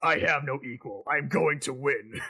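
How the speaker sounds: slow, drawn-out, cocky, arrogant, totally full-of-himself delivery. Retelling a game scene where a rival answers Tails: douchebag Shadow voice. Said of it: "he sounds way more like a douchebag".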